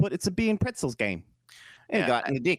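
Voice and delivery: fake New Zealand accent. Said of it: "that's New Zealand".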